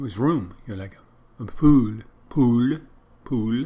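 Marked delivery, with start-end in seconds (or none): 1.4-3.6 put-on loud, slow, outrageous French accent, "pool" dragged out. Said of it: "When he's trying to say pool".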